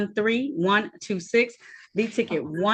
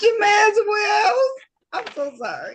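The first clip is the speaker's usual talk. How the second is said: very high, slow, breaking into laughter through words; 11 semitones higher, 4 dB louder than usual. Apologizing to the room while unable to stop laughing: laughing while talking. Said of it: "I don't know why this is making me laugh".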